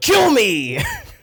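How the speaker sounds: mock sudden, loud, high-pitched shouted outburst. Retelling a boss who walked into the office: imitating boss yelling. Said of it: "yelled in my face".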